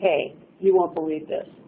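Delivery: put-on, dull, flat, level monotone. Retelling what a consultant at the firm said on the phone: retelling in a really flat voice. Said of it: "in this really flat voice".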